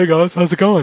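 put-on high, loud Swedish-accented voice. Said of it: "The Swedish chef just comes in and says".

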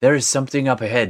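put-on terrible French accent, loud, high. Valerie, landed next to Darmida, calls out; terrible French accent. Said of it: "that's a terrible French accent".

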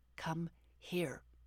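hissed, hissing delivery. Someone calls over a hound that has grabbed a toy, hissed. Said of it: "I hissed".

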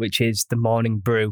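ordinary delivery

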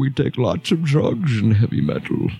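put-on dumb, dim-witted voice. Speaker introducing a persona between segments, dumb Metal Bane voice. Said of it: "i'm using a dumb voice".

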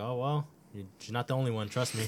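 mock-sarcastic, put-on tone. Retelling how a mom answered her child's complaint about a teacher, imitating mom's sarcasm. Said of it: "mad sarcastic".

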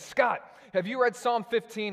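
super-excited, loud shouting, very high. Retelling a phone call from a pastor: imitating Sean Obergfell yelling excitedly. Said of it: "he's yelling 'cause he's always super excited".

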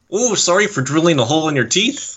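mock Canadian accent. Joking about a very Canadian dentist: imitating a Canadian dentist. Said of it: "he was very, very Canadian".

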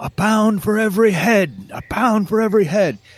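screaming pitched very high, repeated over and over. Describing what listeners hear in the story, Guy of Gisborne screaming. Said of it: "Guy of Gisborne's voice screaming".

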